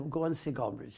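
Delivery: ordinary delivery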